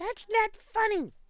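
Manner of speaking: very high, little, tiny squeaky voice. The storyteller gives a character's line: tiny voice. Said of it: "in like a tiny voice".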